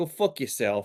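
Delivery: put-on New York or Boston accent. Acting out a company's blunt reply, in a New York or Boston accent. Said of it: "with a fucking New York or Boston accent".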